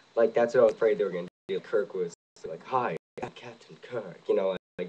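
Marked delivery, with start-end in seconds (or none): 2.6-4.2 slow, drawn-out, over-the-top hammy delivery. Acting out a feared version of the movie's Kirk: over-the-top Captain Kirk impression. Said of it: "all really over the top".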